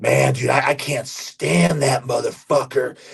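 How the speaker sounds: put-on angry, ranting voice. Retelling what an angry employee said about someone: imitating an angry employee. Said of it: "an employee of ours who's just very angry".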